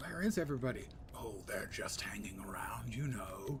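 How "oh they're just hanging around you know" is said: put-on evil villain voice, much lower. Answering their own question about all the dead dudes, in an evil overlord impersonation. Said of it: "my best evil overlord impersonation".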